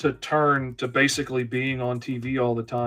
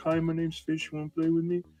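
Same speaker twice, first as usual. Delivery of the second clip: put-on nervous, timid, shy little kid voice; 4 semitones higher, 4 dB quieter than usual. Retelling how he talked to other kids as a child: imitating his shy child self. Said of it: "the incredibly shy Fish that was absolutely terrified".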